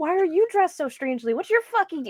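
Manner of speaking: shrill, very high-pitched, furious, angry delivery. A character confronts a strangely dressed stranger, angry. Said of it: "I'm so angry right now".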